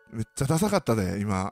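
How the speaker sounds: quiet mumbled muttering. Speaker retells someone muttering at them: retelling a mumbled remark. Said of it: "とかボソボソ言われながら".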